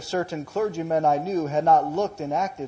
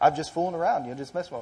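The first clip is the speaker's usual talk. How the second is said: ordinary talk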